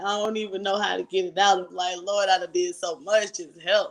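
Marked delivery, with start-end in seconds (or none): 2.0-3.9 put-on desperate, tearful, crying, pleading delivery. Retelling own prayer while crying in church: retelling own crying prayer. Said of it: "And I'm just crying".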